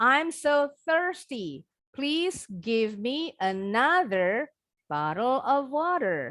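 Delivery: slow, deliberate reading, tongue-tip th in thirsty. Modeling an English sentence for a student practicing the TH sound, slow reading. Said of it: "Pelan-pelan aja bacanya".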